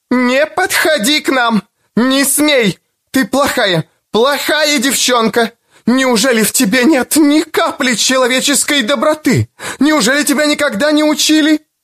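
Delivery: very high, quavering, frenzied, wild, trembling scream. A mother yells at the girl who followed her son: loud, wild, trembling. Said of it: "Громким, диким, дрожащим голосом".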